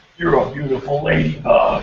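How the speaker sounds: put-on growly superhero voice. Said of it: "he talks like this".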